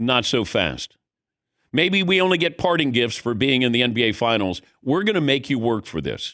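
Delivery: ordinary delivery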